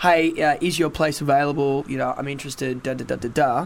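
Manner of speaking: plain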